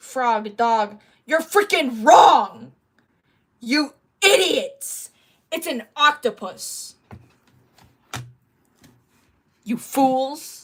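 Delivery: very loud, all-out yelling. Talking to others about a sticker's animal, yelling. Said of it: "I'm yelling".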